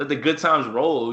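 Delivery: normal talking voice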